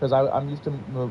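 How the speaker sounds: ordinary delivery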